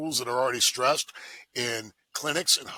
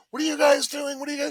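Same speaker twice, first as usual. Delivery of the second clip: mock very high-pitched screaming woman's voice; 4 dB louder than usual. Retelling a woman screaming at officers during an arrest, imitating a woman screaming. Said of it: "this woman screaming like".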